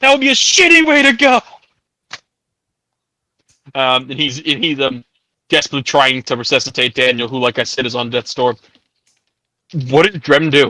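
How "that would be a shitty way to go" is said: high, desperate, pleading shout. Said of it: "calling out".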